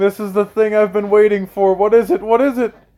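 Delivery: high-pitched screaming of the words. Retelling dropping to the knees on hearing the name; re-enacting own screaming. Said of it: "I drop to my knees and I start screaming".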